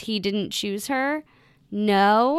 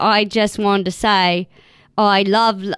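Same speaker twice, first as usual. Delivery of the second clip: put-on British accent, slipping in accidentally; 6 dB louder than usual. Speaker attempting an accent, slipping into a british accent. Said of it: "I'm going British".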